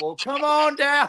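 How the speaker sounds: high, showy game show host voice. Retelling how a man welcomed the speaker onto a challenge: game show host voice. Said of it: "just like like a game show host".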